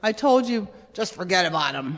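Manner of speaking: low, deep, dropped dad voice. Retelling what his dad told him years ago, in dad's Nick Nolte voice. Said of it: "he had this kind of Nick Nolte voice".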